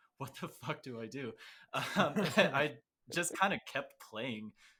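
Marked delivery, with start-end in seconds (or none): 0.2-1.4 sudden panic, fast panicked blurt. Recalling blanking during a solo: retelling a moment of panic. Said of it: "there was this moment of panic where I was like".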